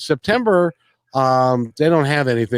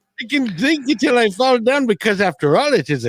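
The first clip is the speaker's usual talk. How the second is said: put-on Indian accent, pitched well up; 10 semitones higher than usual. Joking about drinking on Saint Patty's Day, in an Indian accent. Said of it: "Why am I doing an, an, an Indian accent?".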